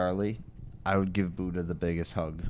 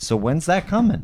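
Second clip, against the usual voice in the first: shrill, very high, loud yelling; 10 semitones higher, 8 dB louder than usual. Demanding to know when the mesh is coming: yelling. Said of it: "I'm sorry for yelling".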